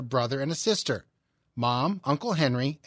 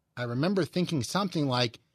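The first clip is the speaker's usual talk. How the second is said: ordinary talk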